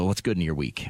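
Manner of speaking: ordinary delivery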